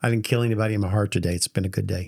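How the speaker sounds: mock stone-faced flat delivery. Retelling what a group member said to a question: imitating a stone-faced deadpan. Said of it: "she looks at me just as stone faced as can be".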